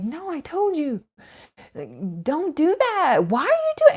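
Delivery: mock yell, high and loud. Retelling a mother scolding her small child: imitating a mother yelling. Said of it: "And she was yelling, like, yelling".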